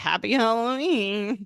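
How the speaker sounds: play-acted, needling, snide, sarcastic heckling tone. Retelling how Sid greeted passing guests: imitating Sid's sarcastic tone. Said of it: "He was kind of sarcastically being like".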